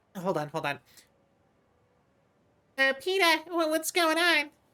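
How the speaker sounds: very high, animated, swooping sing-song put-on voice. Speaker acts out a scene, doing a Lois Griffin impression. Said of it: "doing like an impression of uh, like Lois".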